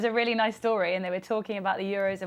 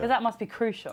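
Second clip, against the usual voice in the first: plain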